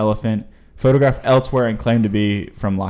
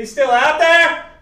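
acted, shrill, very high, startled, surprised yell; 4 dB louder than usual. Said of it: "Why'd you have to yell that?".

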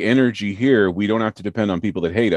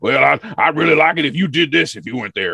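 cartoon cowboy voice, higher pitch; 6 semitones higher than usual. Host quoting what folks say while shaking his hand: Yosemite Sam voice. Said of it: "everybody sounds like Yosemite Sam".

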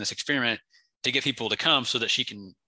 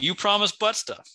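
very high, sobbing, crying yell; 10 semitones higher than usual. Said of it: "that he's crying, like, yelling that".

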